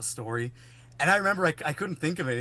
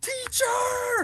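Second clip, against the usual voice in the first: very high yell, far off. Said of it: "he yells".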